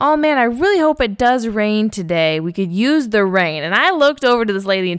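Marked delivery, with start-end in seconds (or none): 0.0-3.6 put-on oblivious, pointed announcing delivery. Retelling what a lady two chairs down at the salon said: imitating someone speaking loudly. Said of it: "said very loudly".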